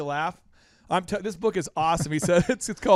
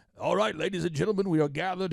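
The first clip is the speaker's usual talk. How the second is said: fast, put-on old English accent; 5 dB quieter than usual. Retelling what she said about a comedian's bit, in an old english voice. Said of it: "that old English voice he does".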